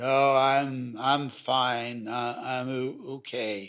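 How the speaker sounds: put-on drunken, slurred speech. Retelling how the guru answered after stumbling: imitating drunken slurring. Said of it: "He turned and slurred".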